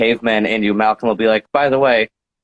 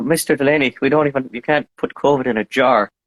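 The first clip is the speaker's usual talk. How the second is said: Scottish speech with an Irish tinge; 3 semitones higher than usual. Imitating Malcolm talking to Mister Delaney: Scottish-Irish accent. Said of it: "he's like my little Scottish-Irish guy".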